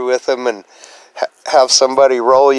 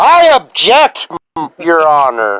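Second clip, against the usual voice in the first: forceful, aggressive, higher; 4 semitones higher, 3 dB louder than usual. Practicing an objection for court, showing an aggressive objection. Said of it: "bit more aggression too".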